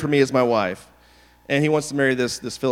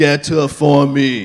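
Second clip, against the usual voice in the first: put-on caveman-like voice, louder; 5 dB louder than usual. Reading Samson's reply to his father: best Arnold impersonation. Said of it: "with your best Arnold impersonation".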